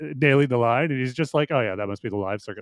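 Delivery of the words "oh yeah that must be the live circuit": low, quick, completely deadpan, no audible reaction. Praising an actor's performance, the speaker retells Leslie Dwyer's line, deadpan. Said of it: "Like it just completely deadpan".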